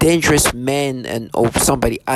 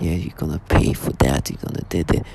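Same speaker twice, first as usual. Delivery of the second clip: breathy, deep serious-guy voice, threatening; 9 semitones lower, 4 dB quieter than usual. Explaining how people talk when they want to seem serious, in a put-on deep serious voice. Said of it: "they start talking this like deep voice".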